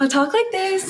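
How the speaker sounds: put-on very high-pitched, babyish customer service voice. Explaining how they have started to talk, customer service voice. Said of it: "I put on my customer service voice".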